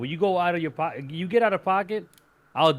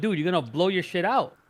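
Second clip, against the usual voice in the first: ordinary talk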